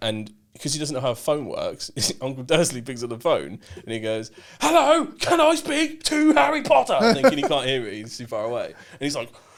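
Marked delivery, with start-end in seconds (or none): 4.6-6.9 very high, slow shouting. Retelling a first phone call answered by Uncle Dursley, Ron Weasley shouting into phone. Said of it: "Like he's going off".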